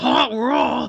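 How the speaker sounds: cartoonish put-on French accent. Complaining about a cartoon character's accent, the speaker does Hot Rod's French accent. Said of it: "He's got that accent".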